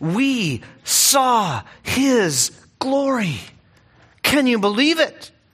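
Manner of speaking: put-on awed, marvelling voice, lifted. Reading a Bible verse aloud, acting out John's wonder. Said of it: "hear the wonder in John's voice".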